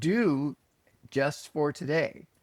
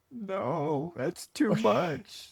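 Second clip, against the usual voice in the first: mock weepy, very slow, tearful voice; 4 semitones higher than usual. Retelling a tearful reply to an inner voice: imitating own past crying. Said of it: "said back to the voice crying".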